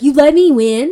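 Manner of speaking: very loud, angry, pissed-off, accusing tone. Retelling a book scene where she learns he let her win: imitating a pissed-off question. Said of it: "So she's pissed about that".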